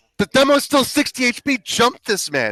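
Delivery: very loud, shrill, high, swooping, drawn-out scream. Retelling a callout to the team in a match: retelling a scream. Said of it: "And I'm screaming".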